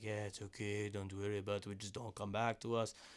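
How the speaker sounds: put-on Spanish-accented voice. Retelling what the father said when they went back: put-on spanish accent. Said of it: "doing an accent for somebody that's not myself".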